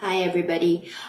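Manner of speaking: unconfident, slouching delivery. Showing a room how speaking while slouching sounds: slouching, unconfident delivery. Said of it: "if I am slouching, I'm talking like this".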